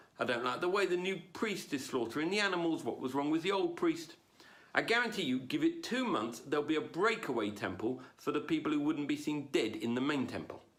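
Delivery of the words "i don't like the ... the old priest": ordinary talk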